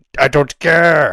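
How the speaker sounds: very loud anime-style yell. Doing a Goku and Vegeta roleplay as asked: Vegeta voice. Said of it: "Vegeta be like".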